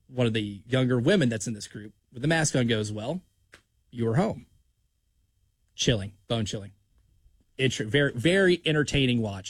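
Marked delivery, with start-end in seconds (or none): 2.9-4.4 soft, hushed, quiet voice. Retelling a horror film scene, voicing a masked young woman in a hushed, quiet tone. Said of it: "in like this hushed, quiet tone".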